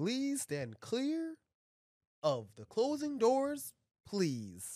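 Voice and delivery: very drawn-out, slow, loud, high automated announcer voice. Imitating the recorded train door announcement, imitating a subway door announcement. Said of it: "the second please sounds so much sassier".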